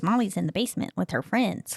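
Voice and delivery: ordinary delivery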